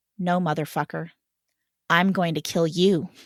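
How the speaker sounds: understated, dead-serious, calm, deadly menace. Retelling how the head bouncer answered a man with a gun: imitating a very soft threat. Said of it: "leans down and very softly says".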